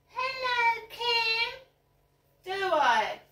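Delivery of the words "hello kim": squeaky, very high, exaggerated mocking parody voice. Speaker parodies how others imitate him greeting someone at the co-op, exaggerated mocking imitation. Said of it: "I don't go".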